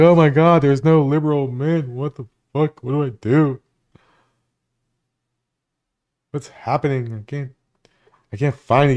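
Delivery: put-on tearful, sobbing, crying girl's voice. Mocking a girl who can't find a man, imitating a girl crying. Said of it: "You seen that girl crying like".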